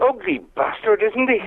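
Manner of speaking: put-on Irish accent. Retelling what he said to someone, in an Irish accent. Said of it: "In the Irish".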